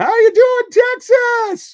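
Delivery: high-pitched announcer voice. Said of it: "the big high-pitched voice".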